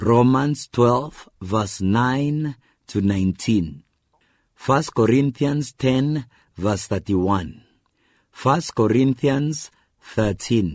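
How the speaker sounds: slow, deliberate reading, as for dictation. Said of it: "I'll read them slowly so that you can write them down".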